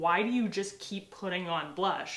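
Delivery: normal talking voice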